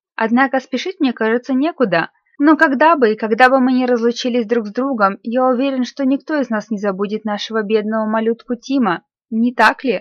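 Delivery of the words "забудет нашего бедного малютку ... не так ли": ordinary delivery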